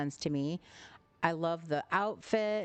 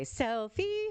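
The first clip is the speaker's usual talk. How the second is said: high, screeching, squawking cartoon bird scream; 8 semitones higher than usual. Recalling the Alice in Wonderland bird: imitating the Alice in Wonderland bird screaming. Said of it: "I sound like that when I say".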